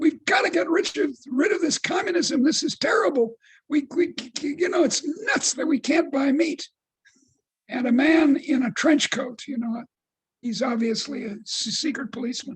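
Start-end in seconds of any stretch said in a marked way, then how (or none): 0.0-6.7 angry ranting with put-on angry shouting. Telling a joke about a man in a meat line: imitating angry shouting. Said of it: "he starts shouting".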